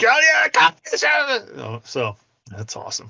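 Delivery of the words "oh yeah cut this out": very high-pitched loud screaming holler. Describing how she reacts during the game, acting out her outburst: imitating her screaming. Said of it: "she's screaming".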